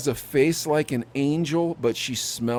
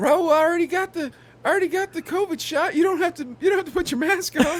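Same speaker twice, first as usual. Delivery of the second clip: put-on very high-pitched girl's voice. Role-playing a date scene, acting as the girl. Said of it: "I'll pretend I'm the girl".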